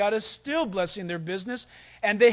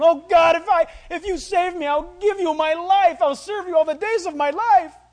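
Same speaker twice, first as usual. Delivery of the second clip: put-on sobbing, loud, high pleading voice; 8 semitones higher, 6 dB louder than usual. Retelling a movie scene of a man swimming to shore, praying to God, mock-crying. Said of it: "he's crying while he's swimming".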